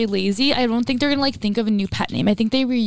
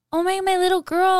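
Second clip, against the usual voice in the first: mocking, silly, high-pitched baby talk; 8 semitones higher than usual. Retelling how an ex-boyfriend talked to her: imitating a stupid baby voice. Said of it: "he literally was like".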